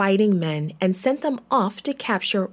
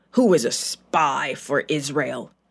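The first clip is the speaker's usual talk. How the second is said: very low, angry growled delivery; 7 semitones lower than usual. Reading a story: the angry king demands answers of his generals, growled. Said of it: "he growled at his generals".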